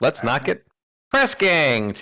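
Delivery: put-on animal critter character voice. Voicing a rabbit character declining to follow: rabbit's voice. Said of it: "in the rabbit's voice".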